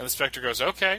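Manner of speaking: ordinary talk, nothing marked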